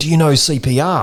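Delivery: high-pitched, loud yelling out. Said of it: "she yells out".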